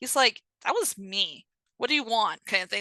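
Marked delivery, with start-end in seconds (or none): 0.6-2.5 mildly challenging, a little defiant tone. Retelling a story, quoting an archer who admits shooting the horse: imitating a defiant archer. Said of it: "he gets a little defiant".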